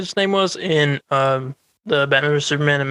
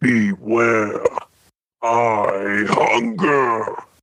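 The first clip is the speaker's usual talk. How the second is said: deep, looming giant voice, dropped low; 4 semitones lower than usual. Testing a soundboard on how Galactus might sound: Galactus voice. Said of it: "this is what I imagine Galactus sounding like".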